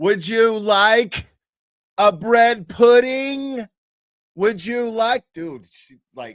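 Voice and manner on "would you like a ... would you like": very loud, high-pitched, raised talking-at voice. Imitating talking to someone who doesn't speak English: imitating talking louder. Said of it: "and you talk louder".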